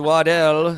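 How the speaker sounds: very loud, fancy French-style pronunciation of name. Explaining a surname's pronunciation: fancy French pronunciation of Waddell. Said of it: "that's the fine French pronunciation. Like, so if you're feeling saucy and fancy, yeah, we would say".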